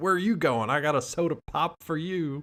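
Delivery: light, high-pitched calling out. Recapping a movie, the speaker acts out a character retelling a yell at the guys. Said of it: "he yells at the guys like".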